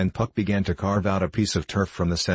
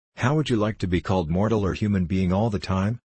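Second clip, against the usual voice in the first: plain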